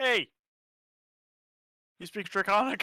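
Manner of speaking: high, loud yell, calling out. Yelling down at town guardsmen from above: yelling down at guards. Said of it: "I'm going to yell down at them".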